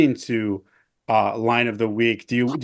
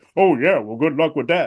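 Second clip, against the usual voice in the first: put-on smug voice, pitched higher; 3 semitones higher than usual. Imitating a guest who answers everyday expressions: smug Neil impression. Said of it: "I tried to do his voice".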